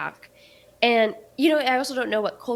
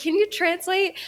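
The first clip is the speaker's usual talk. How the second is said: frantic, panicked, high-pitched delivery; 9 semitones higher than usual. Retelling looking at Hugo for help: imitating own panicked question. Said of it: "all panicked".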